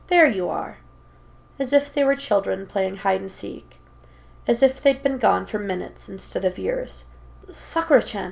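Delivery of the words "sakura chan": stammering, stuttering voice. Naruto, greeted by sakura after years apart, stammering. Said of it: "Naruto stammers".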